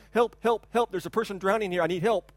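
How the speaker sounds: usual speaking voice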